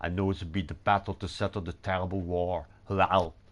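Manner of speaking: put-on Austrian-accented English, put on. Translating a German game character's line into English, best Austrian accent. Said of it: "My best Austrian accent".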